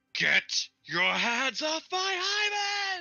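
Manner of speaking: very high, very slow, swooping, booming put-on shout. Casting a spell in a game scene while shouting in character. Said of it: "and I'm shouting".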